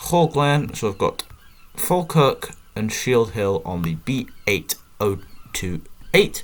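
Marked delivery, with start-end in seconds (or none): 1.7-6.4 very slow, deliberate, drawn-out reading. Reading a road sign aloud during a game, very slow. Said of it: "I don't know why I said that so slowly".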